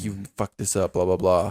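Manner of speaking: very rude, nasty, belittling tone. Retelling what a girl at dinner said to the waiter: imitating a very rude tone. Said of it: "in a very rude tone".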